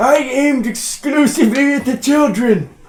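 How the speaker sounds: put-on overexcited, gleeful old man voice. Playing an old grandpa bragging in a joke bit: put-on overexcited grandpa voice. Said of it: "You're a little too excited about it".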